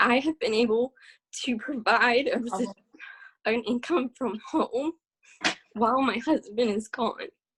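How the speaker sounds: voice breaking, tearful, crying through the words. Sharing how earning from home changed her life, crying while speaking. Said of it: "I'm an ugly crier for sure".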